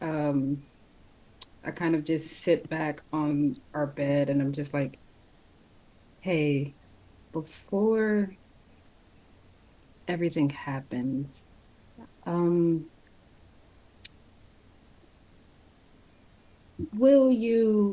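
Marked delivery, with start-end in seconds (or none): 6.2-17.9 hushed, whispering voice. Asking a partner something before he leaves: whispering. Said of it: "I'm whispering that".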